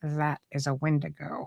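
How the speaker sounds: quaint, unflinching, soft, slow, calm little voice. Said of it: "he had this this this really quaint little voice".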